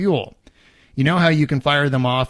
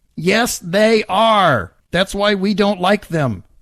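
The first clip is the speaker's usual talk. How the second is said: put-on high, petulant, whiny little child voice; 8 semitones higher, 3 dB louder than usual. Contradicting the other speaker mid-argument in a petulant whiny kid voice. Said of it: "I'm doing like the petulant little whiny kid voice".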